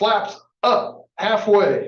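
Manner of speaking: high, slow, loud called-out delivery.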